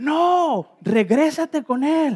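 high, slow yell. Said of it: "la enfermera me grita".

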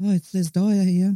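small, high little voice. Telling the story of a first phone conversation with a man, in Les Dyer's little voice. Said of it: "this little voice on the end of the line's come".

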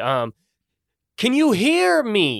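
calling out loudly. Where the lava is too loud to talk, a character tries yelling out. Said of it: "I'm gonna yell out just to see".

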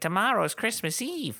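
very high, little, squeaky chipmunk voice. Retelling a story, the elves address Fred in little chipmunk voices. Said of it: "all the elves in their little chipmunk voices like".

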